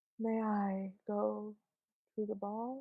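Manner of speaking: hushed, very quiet, dazed, sedated-sounding delivery. Speaker mimicking how an actress delivers a line, imitating a sedated delivery. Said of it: "sounds like she's been sedated".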